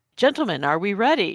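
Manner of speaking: super polite, mock-formal gentleman voice, wide pitch range.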